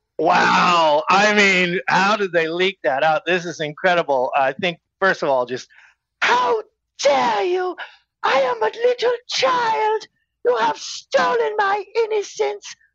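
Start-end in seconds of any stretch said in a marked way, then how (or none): 6.2-12.7 very high, piping, squeaky put-on voice. Doing an impression of Greta for the others: Greta Thunberg impression. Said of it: "is that good enough".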